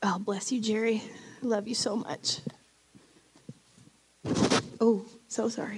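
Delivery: crying while speaking. Speaker overcome after reading a Bible verse, crying while speaking. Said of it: "I got crying".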